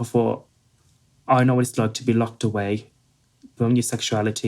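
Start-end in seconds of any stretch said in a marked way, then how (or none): none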